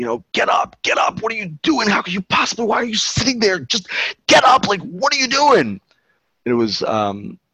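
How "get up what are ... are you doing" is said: very high, frantic screaming, losing control. Recounting a kid on a trail screaming at another person: imitating a kid screaming. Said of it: "screaming at him at the top of his lungs".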